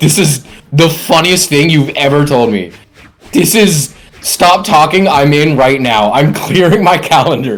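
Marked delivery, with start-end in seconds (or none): none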